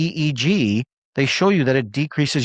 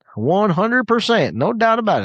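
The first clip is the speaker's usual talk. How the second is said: put-on Texas accent, pitched up; 8 semitones higher than usual. Speaker answering viewers in the chat, Texas accent. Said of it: "An Indian guy speaking in a Texas accent".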